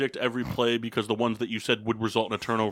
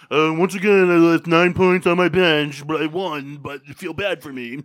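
very high, very loud, drawn-out mocking voice; 6 semitones higher, 10 dB louder than usual. Mocking how Kendall complains weekly about fantasy points on his bench: imitating a friend. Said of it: "every single week we talk about fantasy football, it's like".

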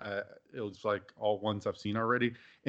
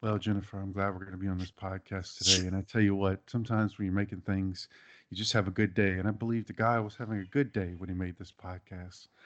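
put-on soothing voice; 2 semitones lower than usual. Greeting a podcast co-host in a Bob Ross voice. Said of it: "That was my Bob Ross impression".

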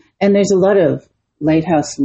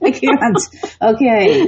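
high-pitched, helpless giggling laughter. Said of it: "Stop laughing".

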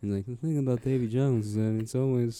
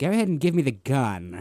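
put-on British accent; 2 semitones higher than usual. Imitating an actor's weird British accent in a film: Kevin Spacey British accent. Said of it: "He's doing that the whole time".

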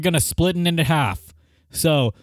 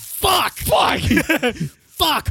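put-on exasperated, frustrated cursing; 10 semitones higher than usual. Acting out characters who overshot their jump, mock-exasperated cursing. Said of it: "characters overshoot jump, exasperated cursing".

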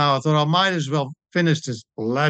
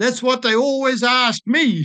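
put-on very high-pitched, drawling American accent; 9 semitones higher than usual. Retelling what an elderly American triathlete asked: imitating an American drawl. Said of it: "in her American drawl".

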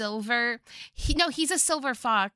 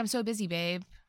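usual speaking voice

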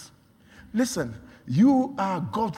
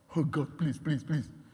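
mock crying, pleading tone, quieter; 3 semitones lower, 8 dB quieter than usual. Preaching that god wants people to act: imitating someone crying and begging god. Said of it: "you are crying".

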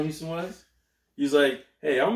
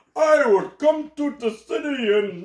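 fake Indian accent, much higher, louder; 10 semitones higher, 4 dB louder than usual. Arguing about a basketball player, the speaker quotes him: put-on Indian accent. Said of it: "That was an Indian guy accent you did".

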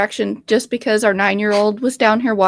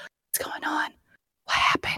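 very soft, hushed, breathy whisper; 6 semitones higher, 13 dB quieter than usual. Retelling how a friend whispered during a movie: imitating someone whispering. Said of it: "Stop whispering".

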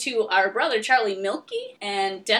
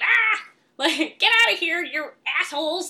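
cranky grandma voice, crabby yell, a bit high; 7 semitones higher, 3 dB louder than usual. Retelling how a tiny grandma yelled when crabby: imitating grandma's crabby yell. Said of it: "she was really crabby".

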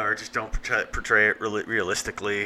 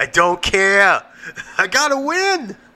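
put-on manic voice, higher and louder; 10 semitones higher, 8 dB louder than usual. Acting out a scene from the movie Uncut Gems: Adam Sandler impression. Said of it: "It started as Adam Sandler".

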